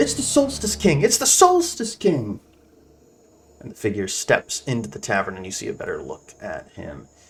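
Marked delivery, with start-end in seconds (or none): 0.0-2.4 put-on little girl yelling, much higher and louder. Game narrator voicing a girl running to the tavern doorway, little girl yelling.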